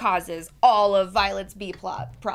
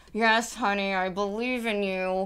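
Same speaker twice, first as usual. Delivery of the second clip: mock gritted teeth, slower. Speaker describing Bob's unsupportive replies to Helen, imitating Bob through gritted teeth. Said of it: "through, like, gritted teeth".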